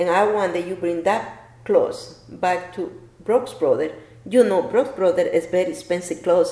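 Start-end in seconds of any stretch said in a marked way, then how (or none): none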